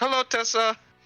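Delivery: cheery, breezy, everyday cheerful tone. Voicing a character greeting Tessa on arrival: cheerful greeting. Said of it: "waves cheerfully as usual".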